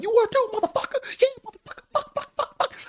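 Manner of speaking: acted, very high, furious cussing rant. Retelling the argument with the uncle: imitating grandma cussing angrily. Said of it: "all these F words going back and forth".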